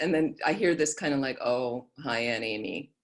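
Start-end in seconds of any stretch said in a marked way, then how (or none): 1.4-2.8 mock, very slow, sheepish, embarrassed delivery. Retelling how the niece answered on hearing her aunt: imitating an embarrassed greeting. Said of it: "like, embarrassed".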